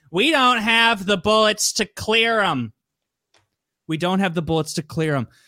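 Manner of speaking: drawn-out, unhurried delivery. Retelling a scene where Maggie answers: imitating Maggie's slow delivery. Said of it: "this is how she delivers it".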